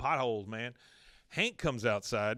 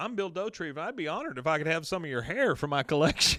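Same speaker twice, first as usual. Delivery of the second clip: put-on happy voice, much higher pitched; 4 semitones higher, 3 dB louder than usual. Retelling what Bill said when he came up, mock-happy Bill Dauterive. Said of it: "he said it so happily too".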